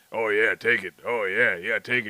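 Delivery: booming, deep, loud put-on mascot voice. Imitating a dude talking during sex: Kool-Aid Man voice. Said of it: "I sound like the Kool-Aid man".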